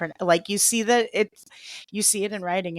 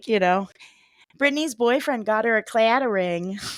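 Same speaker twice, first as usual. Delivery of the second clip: chatty, put-on Midwestern mom-style accent; 2 semitones higher, 4 dB louder than usual. Riffing on how something sounds: midwestern mom accent. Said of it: "like a a Midwestern mom being like".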